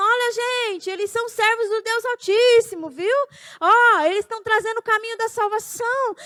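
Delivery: play-acted, mild calling-out, proclaiming announcer-like tone. Imagining people in the street shouting about the speaker and spouse: imitating people shouting. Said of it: "e gente gritando".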